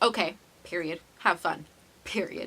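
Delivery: ordinary talk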